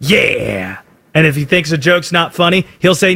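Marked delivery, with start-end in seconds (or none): 0.0-0.8 very low, deep, approving "yeah".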